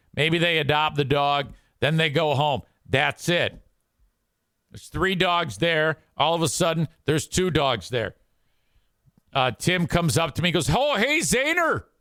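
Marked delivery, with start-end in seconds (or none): 10.7-11.9 high, fake Canadian accent. Imitating a referee who speaks with a fake Canadian accent. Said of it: "they have this fake Canadian accent".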